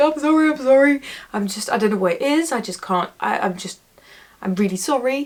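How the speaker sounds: acted, flustered, over-apologetic rambling, words tangling. Retelling how they apologized after blanking in an audition: imitating own apologetic self. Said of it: "I was so apologetic".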